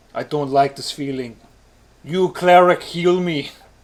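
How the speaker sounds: put-on Austrian action-hero accent. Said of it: "an Arnold Schwarzenegger accent the whole time".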